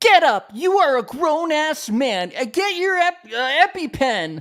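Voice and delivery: put-on ranting reality star voice. Retelling a reality show scene in which Jess rants: imitating Jess ranting. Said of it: "she does her classic thing".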